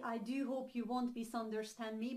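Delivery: ordinary talk, nothing marked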